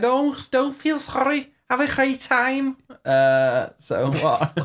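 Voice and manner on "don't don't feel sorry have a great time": very high, poor, put-on Scouse Liverpool accent. Retelling what a Liverpool radio guest said: imitating a Liverpool accent. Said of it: "Your accent's worse than mine".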